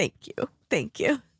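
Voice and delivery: speaking through tears. An interview guest thanking the host, crying. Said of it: "I try to get through one of these interviews without crying".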